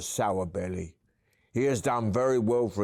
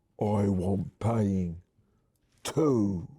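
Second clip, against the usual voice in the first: husky troll voice. Reading a story aloud, the narrator voices Ivy's line in a husky voice. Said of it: "says in a husky voice".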